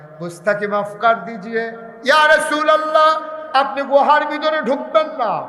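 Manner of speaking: high, loud, pleading cry.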